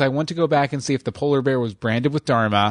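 ordinary talk

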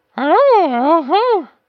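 put-on monkey puppet voice. A performer introduces his puppet, who greets the host; Malcolm the Monkey voice. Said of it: "Say hello".

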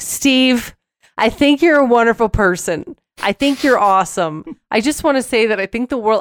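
put-on drunken, effusive, high-voiced rambling. Retelling gushing words to a friend after too much to drink: imitating own drunk self. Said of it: "every time I have too much to drink, I'm like".

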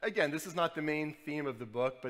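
ordinary delivery

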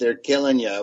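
ordinary talk

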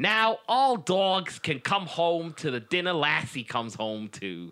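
terrible, exaggerated put-on American accent, high pitch. Reading an advertisement slogan aloud in a bad American accent. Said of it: "That was like the worst American accent ever".

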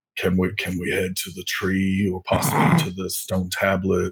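hushed, quiet stage half-whisper. Voicing a character asking to head to the tree: Briv half-whispering. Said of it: "you hear Briv whispering".

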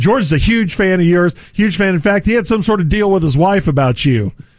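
normal talking voice

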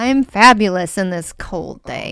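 sarcastic, ironic tone. A show guest answering the host's greeting on a cold day, sarcastic. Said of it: "That's sarcasm".

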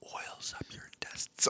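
soft unvoiced ASMR whisper.

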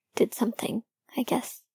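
plain

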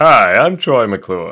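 very loud, booming showbiz delivery. Answering an announcer impression with a Troy McClure voice. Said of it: "That reminds me of".

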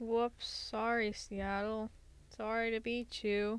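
slow, insincere, teasing, sarcastic tone. Apologizing to the beaten opposing team: sarcastic fake apology. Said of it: "That's why it was sarcastic".

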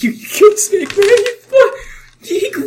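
very high-pitched, tearful, crying wail. Voicing a crying character who shouts at the players: crying NPC voice. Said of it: "Josh is still crying. He's like".

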